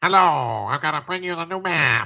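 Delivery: talking while holding the nose. Describing a man's voice, imitating him talking while holding his nose. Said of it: "he's talking like this, but he's holding his nose".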